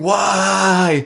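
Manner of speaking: long, high, stretched-out screaming cry. Retelling the hyena man walking into the fire, imitating him screaming. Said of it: "he's screaming".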